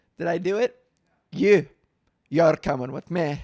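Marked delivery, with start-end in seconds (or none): 1.3-3.4 so-so, loud put-on cartoon ogre voice. Joking about Pride plans, doing a Shrek voice. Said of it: "Is that a good Shrek impersonation?".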